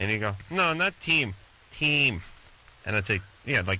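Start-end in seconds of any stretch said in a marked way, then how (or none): 0.5-2.2 put-on slow, high, thick Russian accent, patient tone. Quoting a kid he took out correcting how his name is said, thick Russian accent. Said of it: "this kid had a thick Russian accent".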